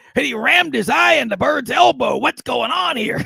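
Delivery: high, gravelly, rough, ground-out voice. Retelling a play-by-play announcer's call on a Bird elbow: Johnny Most gravelly voice. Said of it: "he had that gravelly voice".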